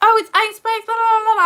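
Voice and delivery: very high, shrill, loud, excited shriek. Retelling how strangers shouted at her in public: imitating people screaming at her. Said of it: "scream [name] at me".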